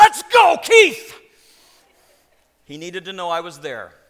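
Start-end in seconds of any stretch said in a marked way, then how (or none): 0.0-1.1 piercing, very high, full-volume scream. Parent recalling cheering at a match, retelling a scream. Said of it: "I would always scream out".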